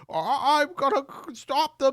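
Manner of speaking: very high, drawn-out cartoon voice. Acting out what RFK says, high-pitched Rick and Morty voice. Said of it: "I'm doing like um like high pitched Rick and Morty there".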